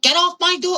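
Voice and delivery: high, shrill screaming. Retelling a brawl with a cousin, quoting her mom: imitating someone screaming. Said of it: "Her mom is screaming".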